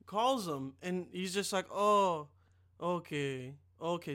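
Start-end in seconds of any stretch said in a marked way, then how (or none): 1.7-4.1 acted, mournful, let-down, deflated tone. Retelling a mechanic's phone call, imitating someone sounding sad. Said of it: "Sounds, like, really sad".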